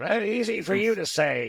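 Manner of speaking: high, wide-ranging put-on old man voice.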